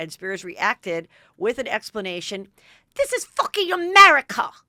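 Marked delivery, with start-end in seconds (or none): 2.9-4.5 put-on shouted in a high, shrill, loud British accent. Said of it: "in a British accent".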